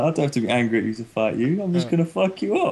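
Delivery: put-on cheerful easygoing tone. Retelling how a fighter said it, imitating someone smiling while talking. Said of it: "he was all smiling, he was like".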